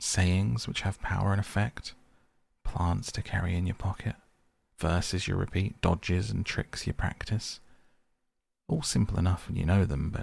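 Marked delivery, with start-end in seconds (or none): none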